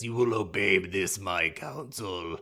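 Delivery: put-on vampire voice. Recounting a vampire film scene, the count gives an order; Orlok voice. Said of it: "doing the voice".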